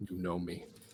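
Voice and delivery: secretive, just-between-us, knowing conspiratorial tone. Grabbing the man by the throat in a game scene: conspiratorial. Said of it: "it turns from something violent into conspirational".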